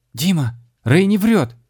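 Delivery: very high, loud shout with voice cracking. A girl shouts to a swordsman in the middle of a chase, voice breaking. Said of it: "срывающимся голосом крикнула Маша".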